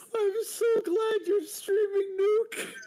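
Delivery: high, laughing to tears. Telling the streamer after a huge laugh that you're glad they're streaming, crying with laughter. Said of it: "I'm actually crying".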